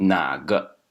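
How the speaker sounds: 哪 of 哪个 held down in low tone. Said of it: "this na over here is in the low tone... you should pronounce it low".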